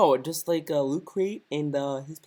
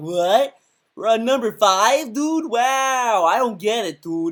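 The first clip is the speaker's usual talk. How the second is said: very slow, high, loud confusion with long drawn-out "wow"; 6 semitones higher, 6 dB louder than usual. Imitating a viewer who watched the countdown out of order: mock confused viewer. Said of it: "You're gonna be like".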